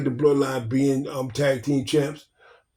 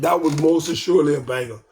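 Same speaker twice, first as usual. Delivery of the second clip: ordinary talk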